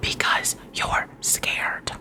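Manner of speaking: soft, whispered. Admitting a hard truth about herself to listeners: whispering. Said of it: "I had to whisper it".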